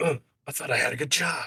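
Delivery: gruff put-on soldier voice. Joking about voicing the other game's line: Snake voice doing Abe. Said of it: "what if you had Snake as Abe?".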